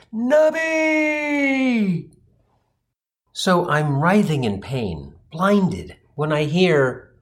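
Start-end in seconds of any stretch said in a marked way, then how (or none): 0.1-2.1 mock epic, very high, drawn-out cry. Retelling being hit in the eyes and yelling at the sky: retelling own yell. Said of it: "I yelled".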